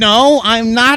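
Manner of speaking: put-on mimicked high nasally kid voice. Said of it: "He had a pretty high nasally voice".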